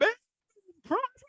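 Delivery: mock, very high, all-out screaming announcer call. Picking broadcaster calls, doing one: Pat Foley screaming. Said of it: "Pat Foley screaming, uh, his head off".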